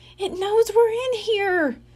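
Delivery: tiny, very high, squeaky voice. Josh, hiding with Dink from a ghost, squeaks. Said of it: "Josh squeaked".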